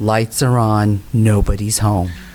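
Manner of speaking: low, slow, mocking put-down tone. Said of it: "he'd shake his head like this and he'd go".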